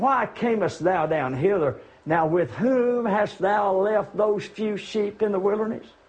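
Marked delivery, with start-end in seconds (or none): none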